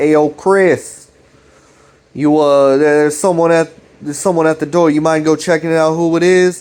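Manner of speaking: put-on New Jersey accent. Describing a video, the speaker voices the dad asking about the door, new jersey accent. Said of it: "He's got this like fucking New Jersey ass accent".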